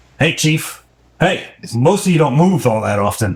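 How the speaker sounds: high, nasal floating-skull voice. Narrator voices a floating skull greeting the just-awakened player, nasal voice. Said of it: "greets you with a nasal voice".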